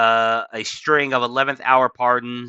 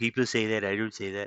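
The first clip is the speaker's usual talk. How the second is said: flourished, embellished, repetitive delivery; 3 semitones lower, 9 dB quieter than usual. Showing the repeated flourishes added when reading posts: Donald Trump impression. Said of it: "doing an impression of him".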